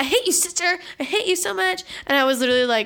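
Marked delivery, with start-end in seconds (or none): 0.0-1.8 fed-up, pitched-up yelling and screaming. Retelling how a sister screamed at a very sick child: imitating Megan screaming.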